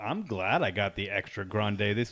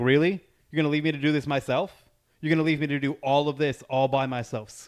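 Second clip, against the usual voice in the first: loud mock hollering scream, as if across distance; 3 semitones higher, 4 dB louder than usual. Retelling yelling at someone across a parking lot, imitating a scream. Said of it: "screaming at her across the parking lot".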